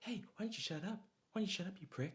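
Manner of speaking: very high-pitched, snarky, sarcastic jab. Describing an actor's usual screen character: sarcastic snarky Ryan Reynolds impression. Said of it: "like that sort of".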